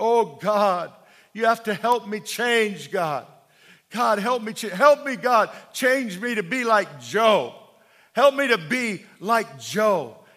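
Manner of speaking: put-on crying out. Retelling a man who threw himself on the altar praying to god: retelling a man crying out. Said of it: "He's crying out".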